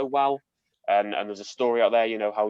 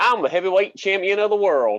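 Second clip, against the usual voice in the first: put-on, very high, raised Southern American accent; 10 semitones higher, 7 dB louder than usual. Asked to speak American, saying a line in an American accent. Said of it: "speak American".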